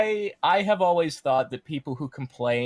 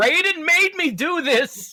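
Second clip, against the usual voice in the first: put-on fighter screaming, higher and louder; 4 dB louder than usual. Imagining a fighter choking and punching enemies: mock screaming as Jade. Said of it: "the entire time she's screaming".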